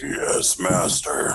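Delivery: gravelly rasp like a longtime smoker. Player voicing an elemental answering its master, in a gravelly elemental voice. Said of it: "that sounds metal as fuck".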